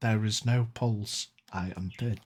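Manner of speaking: faint, airless, barely audible, hushed half-whisper. Playing the dead woman, she answers someone checking her pulse: half-whispering. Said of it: "she whispers back".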